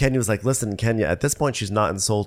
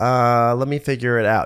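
slow, mock dismissive, barely engaged cold tone; 2 semitones higher, 4 dB louder than usual. Retelling how Kenya answered Marlo: imitating a cold shoulder. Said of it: "giving her a total cold shoulder".

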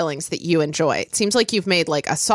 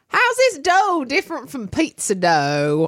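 sudden, full deep-south Southern accent; 4 semitones higher than usual. Trying out an Ernest voice mid-conversation, deep Southern accent. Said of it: "it went suddenly like deep south".

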